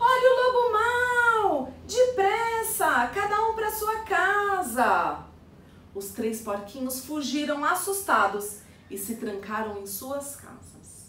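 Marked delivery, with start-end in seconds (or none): 0.0-5.2 high, loud, alarmed, frightened shout with "mau" drawn out. One of three little pigs gathered together suddenly cries out: frightened shout. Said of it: "Juca gritou assustado".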